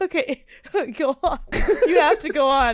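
words breaking up with laughter throughout. Urging the listener to go on, laughing. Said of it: "I can't stop laughing".

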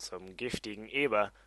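ordinary delivery

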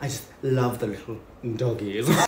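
put-on villainess voice. Getting into character as Cruella, speaking in a Cruella de Vil voice. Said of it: "only one thing I need to complete".

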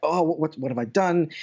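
acted flustered panic, stammering with repeated words. Retelling a customs search at an airport: imitating own panic. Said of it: "suddenly I'm panicking".

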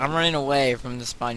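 ordinary talk

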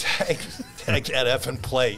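top-of-lungs scream, high and drawn out. Retelling a memory from a baseball game: retelling own scream at top of lungs. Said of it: "I remember screaming at the top of my lungs".

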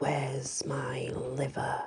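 low, hushed hissing under the breath. Reading a scary story, a voice at the boy's bedroom door, hissed. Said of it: "A voice hissed".

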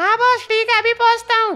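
very high, squeaky henchman voice.

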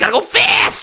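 animated hedgehog hero voice. Showing a made-up character as the voice of Sonic: Sonic voice. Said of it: "This is the voice of Sonic right here".

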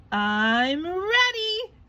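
puffed-up, proud tone. SpongeBob, sure Mr. Krabs will make him manager, says it proudly. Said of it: "he said proudly".

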